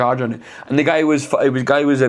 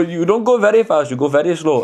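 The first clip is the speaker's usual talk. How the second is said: put-on Middle Eastern accent, higher pitch; 5 semitones higher than usual. Retelling what a man on a video kept saying: imitating a Middle Eastern accent. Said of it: "Is a Middle Eastern accent acceptable".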